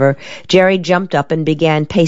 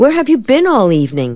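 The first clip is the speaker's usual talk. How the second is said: pressing, insistent, demanding, pitched-up tone; 6 semitones higher than usual. A man sitting beside a woman questions her, demanding. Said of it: "he demanded".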